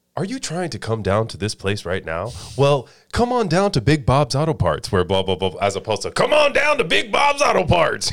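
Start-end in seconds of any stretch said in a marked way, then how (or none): 0.2-5.6 swooping AM radio commercial pitchman voice. A former AM radio worker, asked about his on-air voice, commercial announcer voice. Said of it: "If I had to do commercials".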